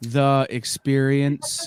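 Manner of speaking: dry, expressionless deadpan, level pitch. Delivering a joke line without mimicking the character: deadpan. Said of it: "the deadpan is what works".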